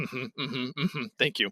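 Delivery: put-on muted, pleased dad voice. Retelling a dad thanking his daughter for a gift, mimicking a quietly pleased dad. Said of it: "not like jumping up and down with joy".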